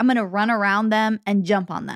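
ordinary delivery

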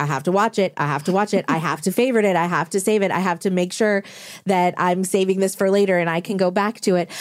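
ordinary delivery

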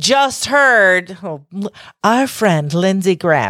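'friend' said sarcastically. Discussing legislation, calling a politician 'our friend': sarcastic 'friend'. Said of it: "I'm saying friend sarcastically".

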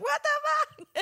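mock very high-pitched, screamed-out words. Retelling someone waking up on a theme-park ride, retelling a scream. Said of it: "she said she was just screaming like".

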